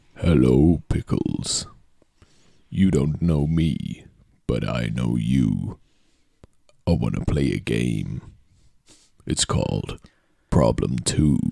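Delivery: put-on deep voice. Addressing pickles in a quoted bit, in a put-on deep voice. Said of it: "I know that he has a deep voice".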